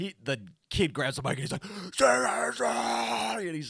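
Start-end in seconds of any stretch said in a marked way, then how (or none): 1.6-3.5 acted, upset, angry, raspy shout, pitched up. Retelling a concert moment, imitating an angry, upset fan. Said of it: "the guy was just so angry, so upset".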